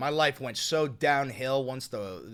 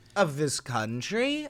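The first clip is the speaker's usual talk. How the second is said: put-on sing-song Valley Girl lilt, rising at the end; 3 semitones higher than usual. Mocking another speaker's phrasing: mocking valley girl uptalk. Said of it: "this fucking Valley Girl".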